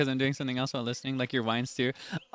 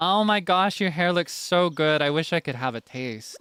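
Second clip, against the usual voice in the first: put-on, laid-on quirky-girl voice; 4 semitones higher than usual. Describing how a certain girl would talk, impression of a quirky girl. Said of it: "That's my impression of them".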